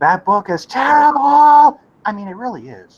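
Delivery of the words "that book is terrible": acted-out shrill, very high, loud raging outburst. Quoting the other speaker's often-quoted line back to him, retelling a raging outburst. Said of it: "You you you rage out with your voice right there".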